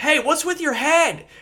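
loud high-pitched yelling. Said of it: "someone else is yelling".

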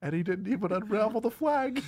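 mournful voice. Retelling Coral's reaction as the others ride away, imitating Coral's sad voice. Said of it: "the most sad voice she can muster goes".

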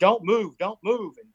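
high, loud, urgent screaming. Retelling how a cop in riot gear screamed at the speaker, retelling a cop's scream. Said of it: "he's screaming at me".

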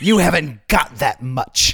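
put-on smoke-worn old movie star smoker's voice. Retelling a movie scene, the speaker quotes the poor sister in Bette Davis smoker's voice. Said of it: "You sounded just like Betty Davis in her smoker's voice".

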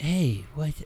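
gentle, quiet, soft-spoken voice with slight lisp. Imitating how Ed greets people: imitating Ed McGuire, soft-spoken. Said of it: "he kinda soft-spoken".

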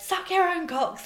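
very high, loud yelled shout. Retelling what she shouted back at someone who ruined her anticipation: retelling shouting back. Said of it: "So I shouted back".

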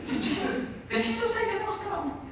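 high, hushed voice with giggling disbelief.

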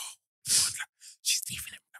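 hushed whisper. Retelling what people in the back whispered in the cinema, whispering. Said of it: "People in the back start whispering".

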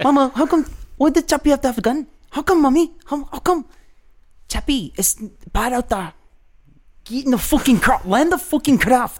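put-on South African accent. Asked by another player to do a south african accent. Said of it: "can you do a South African?".

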